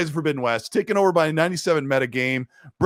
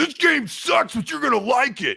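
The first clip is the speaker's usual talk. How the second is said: grumpy, put-on angry guy voice, pitched up; 9 semitones higher than usual. Playing roles in a joke game presentation, mock-angry guy voice. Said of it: "And then I'll be the angry guy".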